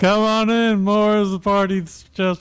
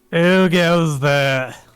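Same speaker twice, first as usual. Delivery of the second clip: put-on a little drunk, tipsy voice; 4 semitones higher than usual. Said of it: "little drunk".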